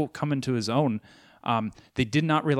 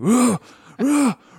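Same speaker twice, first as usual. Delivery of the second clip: put-on barking growl, higher and louder; 10 semitones higher, 8 dB louder than usual. Imitating the actor barking a name while shooting: Bernthal's Punisher bark. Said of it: "literally bark sometimes".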